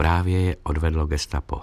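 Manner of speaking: ordinary delivery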